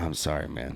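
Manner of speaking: acted teary-eyed tone. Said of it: "he's teary-eyed".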